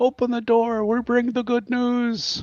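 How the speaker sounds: voice as through door. Speaker in a tabletop game voices someone outside the door: muffled voice from outside. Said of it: "muffled voice from outside".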